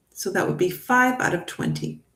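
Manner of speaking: normal talking voice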